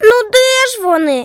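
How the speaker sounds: bright, high, ringing little exclamation. A boy on the edge of his bed searches for his slippers; exclaimed in a ringing voice. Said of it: "Вигукнув дзвінкий голосок".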